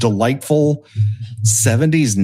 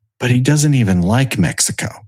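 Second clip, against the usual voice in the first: mock quiet murmuring. Retelling a mother's line said over the dishes, imitating her speaking softly to herself. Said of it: "just softly to herself over the dirty dishes in the sink goes".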